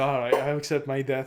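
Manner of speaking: put-on defeated tone. Retelling how a character reacts to being caught: imitating a defeated character.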